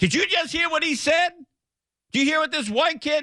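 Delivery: put-on, very high, furious, lashing-out angry yell. Telling how a woman behind him overheard him, retelling her lashing out. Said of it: "she lights me up".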